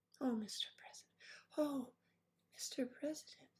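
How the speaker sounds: breathy, whispery starlet voice, breathed out. Teasing a woman who will watch this, the speaker does a Marilyn Monroe voice. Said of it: "You have that delightful Marilyn Monroe voice".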